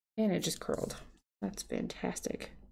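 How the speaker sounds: breathy, soft, whispered, hushed sarcasm. Messing up washi tape while talking and planning, completely sarcastic. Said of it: "I'm being completely sarcastic".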